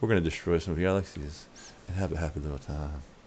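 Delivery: gentle imitated voice.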